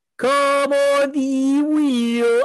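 put-on very slow, high, drawn-out terrace crowd shout. Trying to say it like the co-host's guy, imitating a guy shouting. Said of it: "I was trying to say it like your guy".

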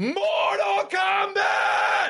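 mock triumphant, victorious scream. Imitating the voice actor's second take after being told to sound victorious: imitating a more victorious scream. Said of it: "You gotta sound more victorious".

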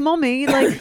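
put-on high British little-kid voice.

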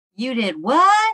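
rising, question-like pitch lift on what. Saying a book title aloud as asked, said with a question mark. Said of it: "You have to say it with that question mark".

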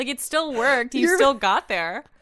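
loud, high-pitched, needling sarcastic tone. Answering another speaker's guess about a word's meaning: sarcastic. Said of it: "You're being so sarcastic".

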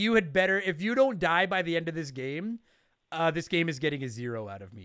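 ordinary delivery

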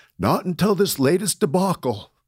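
high, quavering, unsteady, wavering voice. Retelling a World War II veteran's answer to his question, imitating a wavering voice. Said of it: "he says in this wavering voice".

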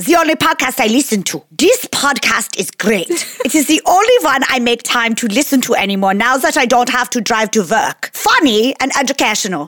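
put-on German accent. A podcast host reading a listener's Apple Podcasts review aloud, in a German accent. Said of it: "My best German accent".

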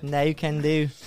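put-on British accent. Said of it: "what no sounds like with a British accent".

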